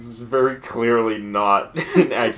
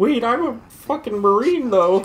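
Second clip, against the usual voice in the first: put-on cartoon duck voice; 13 semitones higher, 4 dB louder than usual. Joking about what the duck character would say: Donald Duck voice. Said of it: "Donald Duck over here is just like".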